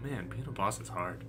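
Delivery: low, soft mutter under the breath. Retelling a line heard muttered under someone's breath: muttering under breath. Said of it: "under his breath".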